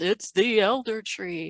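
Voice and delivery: broadcast announcer style, grand and slow. Guest naming this week's show, in an announcer voice. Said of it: "I was saying it with an announcer voice".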